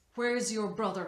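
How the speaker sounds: pressing, insistent and demanding tone. A man holding a girl by the ear questions her, demanding. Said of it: "he demanded".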